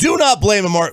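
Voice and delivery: voice cracking and breaking mid-line. Defending a football player's performance: voice cracking. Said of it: "My voice cracked".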